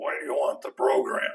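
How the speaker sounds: small, quiet voice. Recounting a meeting with the Admiral at his desk, doing Rickover's little voice. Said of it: "I hear this little voice saying".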